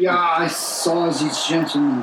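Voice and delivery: put-on low German accent with an Austrian tinge. In a rehearsed mystery scene, an actor does Hans's Austrian-sounding German accent. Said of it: "just a bit more Austrian than German".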